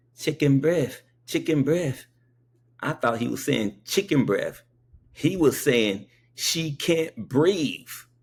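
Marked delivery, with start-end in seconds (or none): 0.2-2.1 put-on thick, laid-on Spanish accent, pitched up. Retelling what a man kept saying: imitating a real deep accent. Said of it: "He had a real deep accent".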